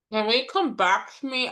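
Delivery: high-pitched speech muffled by a mouthful of food. Giving final thoughts at the end of the session, talking with mouth full. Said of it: "I just put a mouthful of chocolate-covered almonds".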